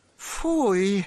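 huffing and puffing. Narrator reads Tomek's reaction on finding a wagon of cheese, huffing. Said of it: "sapnął Tomek".

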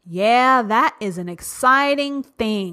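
slow, ironic, sarcastic delivery. Talking to listeners, sarcastic. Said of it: "I'm being sarcastic".

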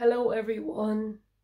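groggy just-woke-up early-morning voice. Greeting everyone at the start, in a morning voice. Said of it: "Morning voice".

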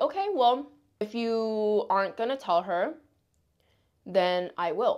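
ordinary talk

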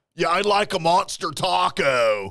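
slow, drawn-out, deliberate movie-star voice. Retelling a performer's bit about ordering a taco: Keanu Reeves voice. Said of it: "he turned into Keanu Reeves".

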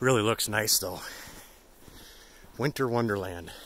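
breathless, out of breath. Trudging through fresh snow in the driveway, speaking out of breath. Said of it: "I'm out of breath, trudging through the snow".

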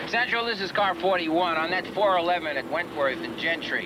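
ordinary delivery

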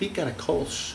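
very soft, hushed voice, almost a whisper. Naming a fellow taster's beer on camera, in a soft voice. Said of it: "I'm saying that in a soft voice".

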